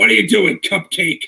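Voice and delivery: rough, gravelly voice. Pitching a Fantastic Four entrance heard from the wings, in a gravelly voice. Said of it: "they hear the gravelly voice from the wings".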